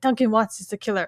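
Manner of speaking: ordinary talk, nothing marked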